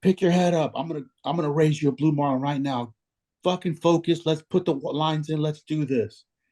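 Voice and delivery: high-pitched, urgent, hollered yell. Speaker retells a man yelling at them after losing the sailfish, retelling a yell. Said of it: "and he yells at me".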